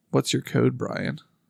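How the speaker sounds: mock doubtful, suspicious, skeptical tone. Asked to say it in her tone, repeating her question to Brian; mock-skeptical tone. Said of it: "that's very skeptical".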